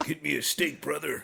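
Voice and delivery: rough, raspy pro wrestler-style voice. Mid-conversation, the speaker does his Hulk Hogan-style dog voice. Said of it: "That's my dog voice".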